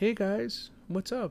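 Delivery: soft, calm, easygoing, very high and slow. Retelling a movie scene as Tobey Maguire arriving: soft, calm Tobey Maguire voice. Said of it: "he has a very soft cadence, very calm".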